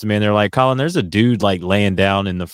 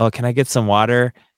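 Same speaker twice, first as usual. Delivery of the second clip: put-on effeminate male voice; 2 semitones higher than usual. Retelling what a man said, imitating an effeminate voice. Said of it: "He had a very effeminate voice".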